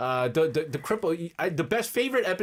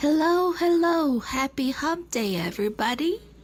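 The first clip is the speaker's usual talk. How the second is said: put-on nasal radio host voice, higher; 10 semitones higher than usual. Playing a listener's entry imitating a radio host: imitating Ajon. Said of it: "Ajon is a very popular, uh, popular person to imitate".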